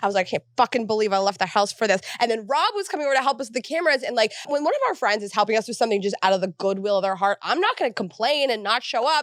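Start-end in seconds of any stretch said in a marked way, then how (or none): 0.3-2.0 put-on grumpy, bad-mood voice. Retelling a rainy day setting up the studio: imitating own grumpy past self. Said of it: "I was in a bad mood".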